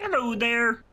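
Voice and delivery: very high, loud, pushed-out frog voice. Greeting the others while trying for a Kermit voice. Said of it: "I think you're going for Kermit".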